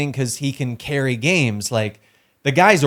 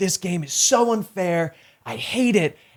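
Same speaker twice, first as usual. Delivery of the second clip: pitched-up, mild ranting yell; 5 semitones higher than usual. Retelling a clip of a player yelling about the game: imitating someone yelling. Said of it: "He's just yelling".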